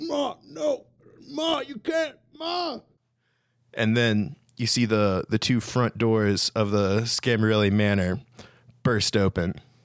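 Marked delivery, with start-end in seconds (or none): 0.0-2.8 muffled, very high, drawn-out voice. Storyteller voices the Don speaking to Ma, in a muffled voice. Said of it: "you hear kind of a muffled voice of the Don".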